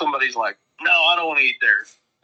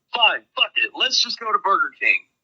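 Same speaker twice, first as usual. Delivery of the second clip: acted, fed-up, furious outburst, pitched up; 8 semitones higher than usual. Retelling Spencer's reaction over the Cajun food plan: imitating Spencer's angry outburst. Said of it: "Spencer gets madder than fuck and just goes".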